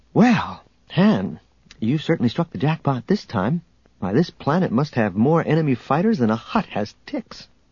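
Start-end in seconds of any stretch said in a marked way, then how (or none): none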